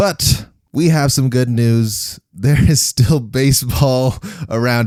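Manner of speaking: tongue-in-cheek jesting, dripping with sarcasm. Co-hosts lamenting the lack of summer sports, delivering good news in a sarcastic tone. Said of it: "the jest in my voice".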